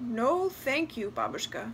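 ordinary delivery, nothing marked

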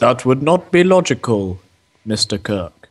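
strictly logical, logic-bound alien officer voice. Someone has told you to think logically; answer with a Spock impression. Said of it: "I was doing a Spock".

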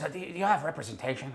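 put-on raspy voice. Retelling what a small chain-smoking man said to him; imitating a raspy voice. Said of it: "he had this really raspy voice".

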